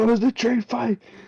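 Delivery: very high, hyped-up cry. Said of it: "I was like".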